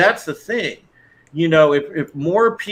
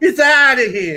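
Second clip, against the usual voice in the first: Italian accent with raised pitch; 8 semitones higher, 3 dB louder than usual. Repeating a line on purpose after noticing it came out in an Italian accent. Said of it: "I kinda sounded Italian there".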